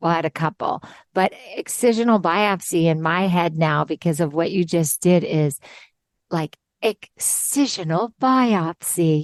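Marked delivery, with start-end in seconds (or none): 6.8-9.2 grand, fancy, high-society posh pronunciation. Joking about how a medical term sounds, fancy posh voice. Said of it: "It got really fancy".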